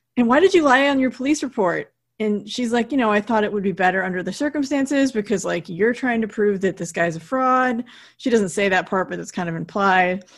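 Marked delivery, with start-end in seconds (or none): 0.2-2.0 loud, high, worked-up, furious acted-out outburst. Retelling a scene, the speaker acts out a man's angry question: retelling an angry outburst. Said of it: "he gets even more angry, like he gets pretty worked up".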